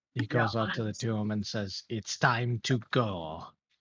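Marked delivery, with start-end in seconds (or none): 1.9-3.4 magically booming voice, slower. A character calls out to two others, voice boosted by magic: magically booming voice. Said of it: "use thaumaturgy so that his voice is booming".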